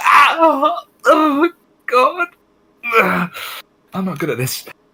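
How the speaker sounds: put-on little-girl shriek, very high, very slow, drawn out. Voicing a character struck by a cramp while gesturing: screaming like a little girl. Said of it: "he screams like a little girl".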